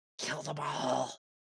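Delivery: very quiet, eerie, creepy half-whisper. Voicing a homicidal slime that half-whispers to another character: half-whispering slime voice. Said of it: "holding you by the hand and whispering to you".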